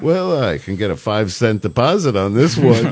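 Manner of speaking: put-on offhand, totally unbothered, casual, blasé tone. Retelling how a radio host answered callers: imitating Alex Bennett's casual blasé tone. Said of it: "in the most casual, blasé way".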